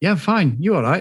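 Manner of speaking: put-on speaking with Welsh accent. Retelling an awkward exchange between Faye and Liam, doing Faye in a Welsh accent. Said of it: "this is my Welsh accent".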